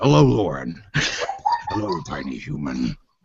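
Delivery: low, heroic robot leader voice. Asked to greet Lauren as Optimus Prime, the speaker obliges: Optimus Prime voice. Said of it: "Can you say hi to Lauren as Optimus Prime?".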